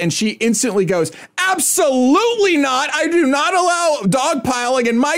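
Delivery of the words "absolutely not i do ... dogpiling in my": put-on yelling, higher. Retelling a judge refusing a second speaker in court: imitating a judge yelling. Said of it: "she's yelling".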